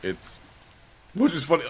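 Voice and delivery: voice cracking up very high. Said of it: "Voice crack".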